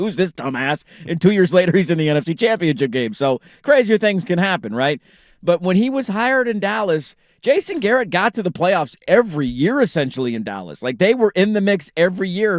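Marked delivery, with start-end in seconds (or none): 0.0-0.8 put-on mocking, ridiculing tone. Retelling how they made fun of a newly hired coach: retelling mocking words. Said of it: "We're like".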